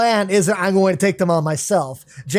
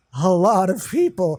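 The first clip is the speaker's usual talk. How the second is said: slow, clumsy, put-on seductive sultry voice. Retelling an anime scene, voicing a character: put-on horny voice.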